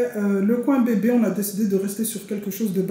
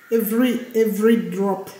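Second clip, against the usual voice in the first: put-on English accent. Speaker announces a brand collaboration to the audience with an english accent. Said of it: "On prend l'accent anglais".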